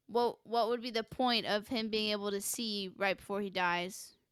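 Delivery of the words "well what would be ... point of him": plain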